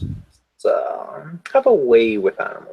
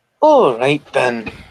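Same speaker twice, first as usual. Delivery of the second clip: put-on Scottish accent gradually creeping in; 4 dB louder than usual. Meaning to voice a British character, the speaker slips into a Scottish accent. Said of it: "I went Scottish".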